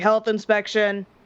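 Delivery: loud shouting, calling out. Describing knocking on a door, the speaker yells through the door. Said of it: "I like to yell through the door".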